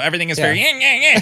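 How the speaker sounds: loud, fast Michigan accent. Describing how their hometown accent came back on a visit home, in a Michigander accent. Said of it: "my Michigander".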